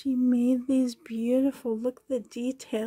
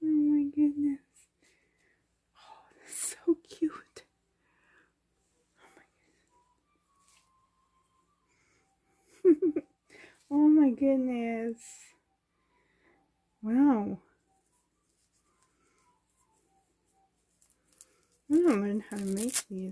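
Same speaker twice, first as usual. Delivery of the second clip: trembling, overjoyed, thrilled, swooping gush; 3 semitones higher than usual. Reacting to something cute, shaking with excitement. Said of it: "I'm shaking. I'm so excited".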